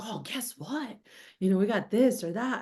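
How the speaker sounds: eager, excited, hushed half-whisper. Coaching on sales delivery, imitating a quiet salesman's excited half-whisper. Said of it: "it's more like even like a whisper".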